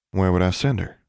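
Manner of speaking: plain reading voice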